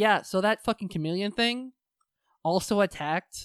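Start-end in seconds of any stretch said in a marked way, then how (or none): none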